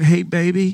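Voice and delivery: mock jittery, uneasy, nervous tone. Retelling calling his wife after being humbled: mock nervous tone. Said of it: "I'm all, like, nervous".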